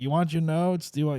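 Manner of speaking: high, heckling, called-out yell.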